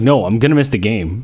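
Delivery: ordinary talk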